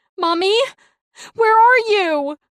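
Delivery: very high, very loud, frantic, shrill panicked yell. Reading a story, a child calls for his mother: panicked yell. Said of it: "Cole yells, panicked".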